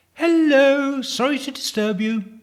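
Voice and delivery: bright, very high, cheery and apologetic tone. Narrator voicing a woman interrupting a man with his eyes shut, cheery. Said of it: "said a cheery voice".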